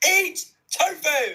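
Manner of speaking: very enthusiastic and highly energetic. Ending a read-aloud answer with a closing line: very enthusiastic. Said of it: "That was the most enthusiasm I've ever heard".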